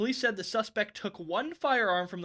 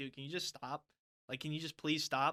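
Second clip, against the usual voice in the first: put-on irritated, annoyed tone, lower and quieter; 3 semitones lower, 7 dB quieter than usual. Retelling someone harassed for an autograph: imitating an annoyed plea to stop. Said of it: "he got pissed".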